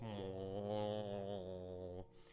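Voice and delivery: put-on low, soft, grumpy moo in an old tortoise voice. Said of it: "looks at you and goes".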